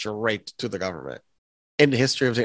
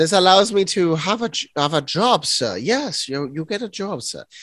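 fake German accent, much higher pitch; 6 semitones higher than usual. Role-playing a scene about a freedom pass and a job; German accent. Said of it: "Are we doing a German accent while doing this?".

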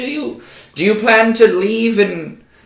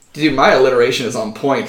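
normal talking voice

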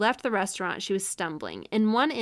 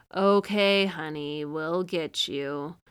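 put-on low, gruff, drunk-sounding sarcastic taunting tone; 4 semitones lower than usual. Recounting what a witness heard a man say, imitating a gruff drunk-sounding voice. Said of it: "just kind of like in that tone".

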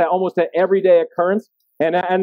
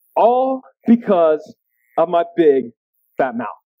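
ordinary talk, nothing marked

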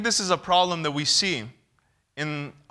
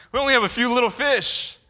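high, snooty, condescending tone; 6 semitones higher than usual. Acting out the disciples answering a question about loaves, mock-condescending voice. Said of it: "Can you even hear their condescending voice?".

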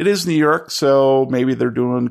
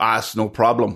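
put-on muffled voice, Eastern European accent. Offering rooms to guests for the night, in a muffled eastern european accent. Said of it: "calls a muffled eastern european voice".

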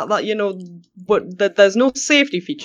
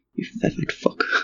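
whispered aside, barely voiced, muttered under the breath. After answering Owl, adding an insult very quietly under breath. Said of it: "very quietly under my breath".

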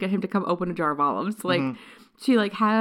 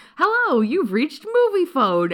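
high announcer voice with big pitch swoops; 8 semitones higher, 4 dB louder than usual. Retelling how Will answers when Karen calls back, in a Mr. Movie Phone voice. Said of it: "really passable Mr. Movie Phone voice".

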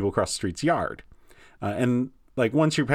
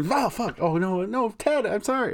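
apologetic put-on snake voice, higher; 11 semitones higher than usual. Acting out the snake that bit a man: voicing the snake apologizing. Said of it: "And he'd be".

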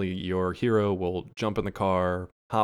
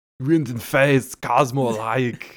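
put-on Austrian accent, higher and louder; 5 semitones higher, 8 dB louder than usual. Voice a dog with his head out of the car window, in an Arnold voice. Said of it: "Why does he sound like Arnold?".

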